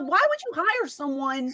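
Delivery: ordinary talk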